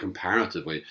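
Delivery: stress on "comparatively".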